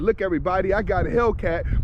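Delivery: ordinary delivery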